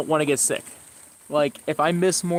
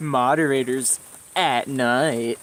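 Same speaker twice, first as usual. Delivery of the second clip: put-on narrator voice, much lower pitch; 2 semitones lower than usual. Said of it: "Just read that in the SpongeBob uh, voice".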